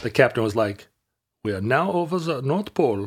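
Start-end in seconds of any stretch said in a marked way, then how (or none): 1.4-3.1 put-on weird, pitched-up Dutch accent. Retelling the captain's announcement on a flight over the pole: weird Dutch accent. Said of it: "he had a weird Dutch accent".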